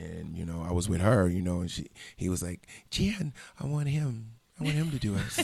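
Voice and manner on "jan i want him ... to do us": soft, pitched-up voice, said softly and high. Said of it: "He had a really soft voice".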